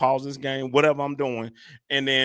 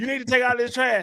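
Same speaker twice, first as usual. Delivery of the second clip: put-on yelling, higher; 11 semitones higher than usual. Imitating a mother calling a child downstairs: imitating mom yelling. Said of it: "mama can yell".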